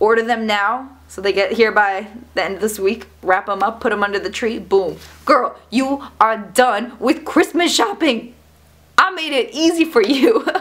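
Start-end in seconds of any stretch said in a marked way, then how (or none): 5.2-10.5 excited put-on voice, higher and slower. Signing off a video about gifts to viewers: excited, put-on voice. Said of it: "I don't know why I'm talking like that. I'm just so excited".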